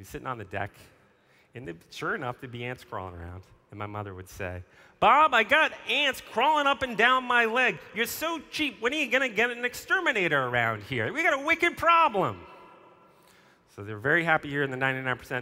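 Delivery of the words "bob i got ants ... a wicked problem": put-on thick Boston accent laid on, loud and high. Retelling what their mother would say to their father on the deck: thick Boston accent. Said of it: "my mom's got a very thick Boston accent".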